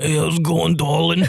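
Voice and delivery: put-on old, longtime smoker voice. Retelling answering the phone the next day, in an old smoker's voice. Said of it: "he sounded like a 48-year-old Edna that's been smoking".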